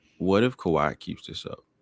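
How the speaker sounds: whispered in a low voice. Asking about a player's recent run, whispering. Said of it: "I'm gonna whisper this".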